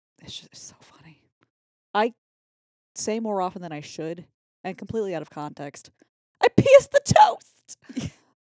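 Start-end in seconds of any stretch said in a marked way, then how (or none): 6.4-8.1 slow, very high, very loud, drawn-out scream. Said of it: "Scream it".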